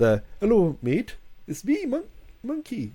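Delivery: high, swooping character voice. Saying he never could do it, speaker attempts the Monkey voice. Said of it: "That sounded just like Monkey".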